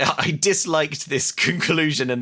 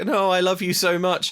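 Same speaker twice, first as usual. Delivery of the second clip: half-hearted, unconvincing fake sadness, pitched a bit higher; 5 semitones higher than usual. Retelling a film scene where the hero mourns his love: imitating Eddie Murphy's unconvincing sadness. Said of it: "unconvincingly tries to act like he's sad".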